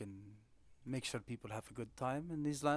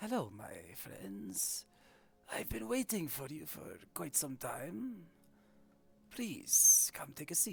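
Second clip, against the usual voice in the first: mystic, swooping fortune-teller voice; 3 semitones higher, 4 dB louder than usual. A narrator voices a lady at a crystal ball greeting the players, fortune-teller lady character voice. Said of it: "this lady in front of you speaks".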